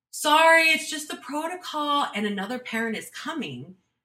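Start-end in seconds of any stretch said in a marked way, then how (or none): 0.1-2.0 very high, shrill, loud called-out shout. Recounting how she shouted after the speaker as they walked away, retelling a shout. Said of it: "she shouts out after me".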